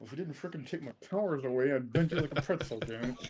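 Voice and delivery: half-swallowed grumbling mutter under the breath. Voicing a character who gets told to rest: mumbling under his breath. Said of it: "He's gonna mumble something under his breath".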